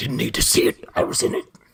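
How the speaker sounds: put-on alien monster voice. Playing Venom and answering a fan's question about the movie, Venom voice. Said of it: "I like your Venom voice".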